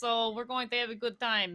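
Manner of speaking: loud, high, booming barbarian woman voice. Introducing the player character Ren to the audience: Ren's strong barbarian lady voice. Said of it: "and she talks like this".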